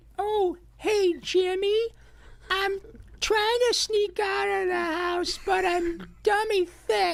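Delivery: very high, squeaky cartoon sidekick voice. Reading the meme line from the script when asked: Carl Wheezer voice. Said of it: "Can you say it?".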